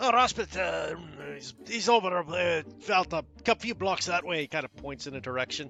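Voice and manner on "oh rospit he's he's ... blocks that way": put-on dwarf voice, higher pitch. A game master voices a dwarf answering a player who stopped him, in a dwarf voice. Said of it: "you stop this one dwarf who goes".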